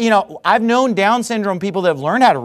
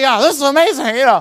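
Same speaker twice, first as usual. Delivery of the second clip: put-on nerd voice, higher and faster; 5 semitones higher than usual. Speaker listing the voices he does, demonstrating his nerd voice. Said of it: "So I do nerd voice".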